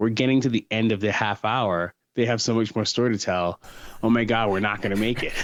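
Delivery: ordinary delivery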